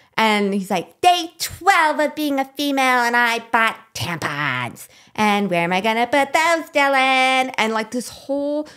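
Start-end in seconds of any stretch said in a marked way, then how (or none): 1.0-7.6 annoying, stupid-sounding, high-pitched put-on character voice. Quoting an online personality's video in a stupid voice: imitating a stupid Dylan Mulvaney voice. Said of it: "this stupid voice".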